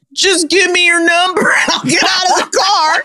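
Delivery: very high-pitched, play-acted man's yell. Retelling her 911 story, acting out the man in her car: retelling a man's yell. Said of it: "And the guy yells".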